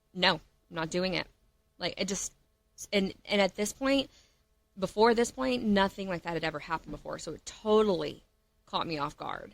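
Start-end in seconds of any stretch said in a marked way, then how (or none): 0.2-1.3 mock harsh, put-on tone. Retelling how he refused their date night plans on the phone, imitating a harsh tone. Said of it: "that harsh tone of".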